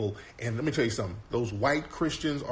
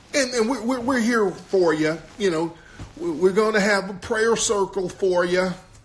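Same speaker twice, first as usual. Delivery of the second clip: put-on down-home country accent, higher and louder; 8 semitones higher, 8 dB louder than usual. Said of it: "that down-home country accent".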